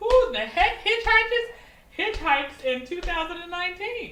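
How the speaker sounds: high, loud, incredulous outburst.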